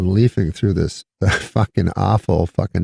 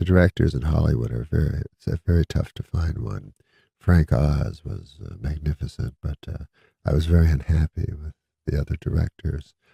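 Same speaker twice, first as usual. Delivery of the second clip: mock calm, peaceful tone, much quieter; 5 semitones lower, 6 dB quieter than usual. Retelling how a storyteller spoke about directing, imitating a peaceful voice. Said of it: "he goes real peacefully".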